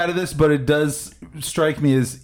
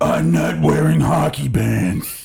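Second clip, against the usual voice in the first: put-on rough film-hero voice, drawn out slow. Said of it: "the only Bale I've ever done before that is".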